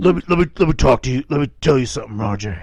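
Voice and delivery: tough vigilante character voice. Joking around with friends, the speaker says it in a Punisher voice. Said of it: "I was trying to talk like the Punisher".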